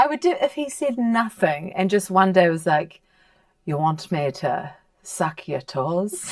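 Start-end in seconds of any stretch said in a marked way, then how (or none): 3.7-6.3 dubious, put-on English accent. Imagining a partner suddenly trying a new line: put-on English accent. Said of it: "I don't know if that's English".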